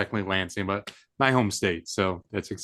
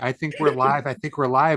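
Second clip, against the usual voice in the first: mock yelling, higher pitched; 5 semitones higher, 4 dB louder than usual. Teasing another speaker about how they kept announcing the stream: imitating someone yelling. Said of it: "You just kept yelling".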